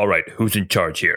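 extremely deep bass voice, quick. Describing a scene, the narrator voices someone speaking from behind: very, very deep voice. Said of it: "the voice is very, very deep".

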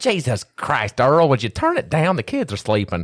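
exasperated, fed-up woman's voice, high and swooping. Imagining a listener reacting to the loud volume: imitating an annoyed lady. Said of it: "there's a lady going".

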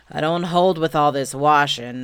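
loud, disgruntled grumbling voice. Narrator reads Eeyore's line, grumbling. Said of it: "grumbled Eeyore".

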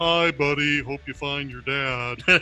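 sea-creature character voice. Speaker showing how people imitate them, doing the narwhal from Elf voice. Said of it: "it's always the narwhal from the movie Elf talking to Buddy".

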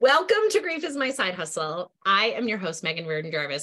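warm voice with an audible smile. The podcast host opens the episode with a smiling voice. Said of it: "you can already hear the smiling in my voice".

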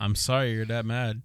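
mock petty, condescending, smug tone. Acting out saying sorry to someone who is mad: imitating a petty, dickish apology. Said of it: "saying it like that is fucking Yeah, you sound like a dickhead".

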